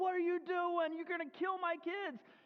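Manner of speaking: mock, high, freaked-out, frantic protective yelling. Retelling being cut off at an intersection, imitating himself yelling. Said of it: "I'm yelling out the window".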